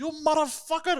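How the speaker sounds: shrill, very high-pitched angry screaming curse. Retelling how a store owner screamed at a man: imitating someone screaming. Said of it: "starts screaming at him".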